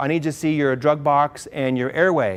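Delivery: ordinary talk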